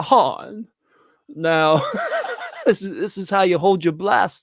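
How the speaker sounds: swooping, animated character voice, pitch swinging all over. Acting out a flashback where Han Solo's dad shows Han how to hold a blaster: sounds like John Travolta. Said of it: "You really do sound like John Travolta".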